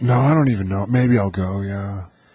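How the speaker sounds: put-on careless, offhand teen voice, tossed off without caring. Answering questions put to the character, the speaker plays a teen in a Kyle voice. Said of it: "His name's Kyle".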